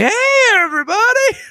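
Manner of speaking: put-on very high, tipsy woman's voice. Retelling a drunk woman bursting into the room: imitating a drunk woman. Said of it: "this woman who has completely had too much to drink is like".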